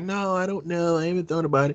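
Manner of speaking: play-acted coy, evasive, playing it down. Imitating politicians answering a reporter's vice president question: imitating someone being coy. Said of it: "they be all coy".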